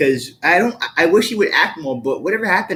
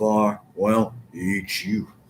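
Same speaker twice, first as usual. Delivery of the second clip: very low, deep rumbling voice; 8 semitones lower, 6 dB quieter than usual. Showing another speaker an impression of Sam Elliott: Sam Elliott voice. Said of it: "That's really good".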